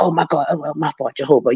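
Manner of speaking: hushed half-whisper under the breath. Retelling a slip-up in the Kingdom Hall: imitating a half-whisper.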